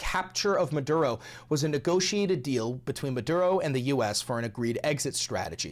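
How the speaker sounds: ordinary talk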